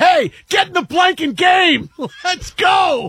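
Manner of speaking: loud excited shout.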